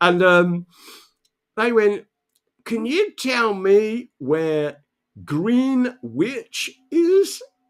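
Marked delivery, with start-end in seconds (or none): 2.6-7.4 put-on American accent, high, very drawn out. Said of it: "That's my accent at the moment for the Americans".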